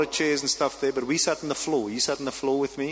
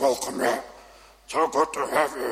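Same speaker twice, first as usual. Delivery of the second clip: voice dropped down into a deep, low register. Retelling how a man greeted the speaker at his door, in a deep voice. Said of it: "this deep voice".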